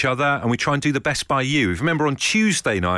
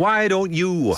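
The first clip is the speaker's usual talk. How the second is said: put-on Northern Irish accent, pitched up; 6 semitones higher than usual. On an Absolute Radio show, a presenter demonstrates a phrase in a Northern Irish accent. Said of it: "that was a Northern Ireland accent".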